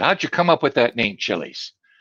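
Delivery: ordinary delivery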